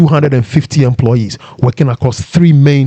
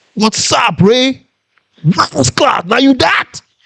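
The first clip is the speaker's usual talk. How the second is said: imitated shout from behind, higher pitch; 11 semitones higher than usual. Retelling a voice calling from behind: imitating Glenn shouting. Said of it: "some voice shouts".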